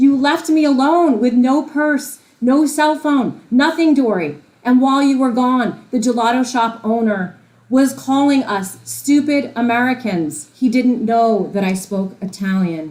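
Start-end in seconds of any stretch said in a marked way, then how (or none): 0.0-10.5 screaming, high-pitched ranting. Retelling how the mother screamed after being left alone: imitating mother screaming. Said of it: "my mother is there screaming at me".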